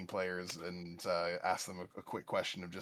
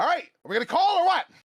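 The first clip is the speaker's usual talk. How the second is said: very loud, shrill, high-pitched, unreasonably loud yell; 10 dB louder than usual. Voicing a stressed card player at a poker table: unreasonably loud shout. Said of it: "I shouted it unreasonably loud".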